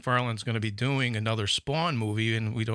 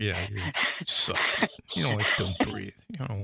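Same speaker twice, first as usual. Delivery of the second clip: mock annoyed, mad-sounding tone; 2 semitones lower than usual. Imitating the other speaker being mad about a disliked movie: imitating someone sounding mad. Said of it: "I could hear it in your voice".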